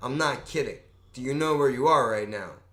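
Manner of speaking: put-on quiet speaking voice. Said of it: "He gets all quiet".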